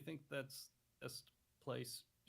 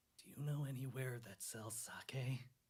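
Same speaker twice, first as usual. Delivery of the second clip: hushed whisper. A character leans close to a woman's ear to ask a question; whispering. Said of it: "sort of whisper in her".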